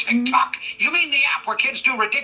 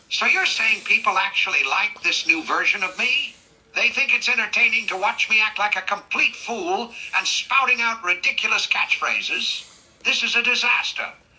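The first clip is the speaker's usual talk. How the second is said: normal talking voice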